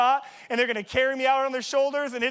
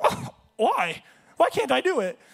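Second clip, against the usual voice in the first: slightly cracked, breaking voice. Retelling questioning a coach who called him out, retelling in a cracked voice. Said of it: "My voice a little more cracked".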